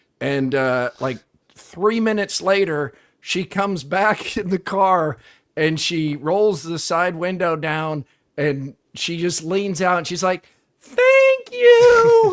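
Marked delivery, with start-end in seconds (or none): 10.8-12.4 shrill, very loud cartoonish voice, long you. Retelling a woman leaning out of her car window during a live interview, cartoon-like. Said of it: "it's really sounds like a cartoon".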